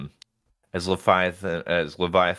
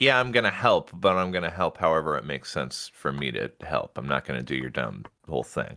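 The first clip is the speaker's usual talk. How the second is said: ordinary talk, nothing marked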